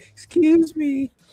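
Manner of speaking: very high, sweet, cute little voice. Imitating someone saying excuse me after owning up: mock cute voice. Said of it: "In the cute way".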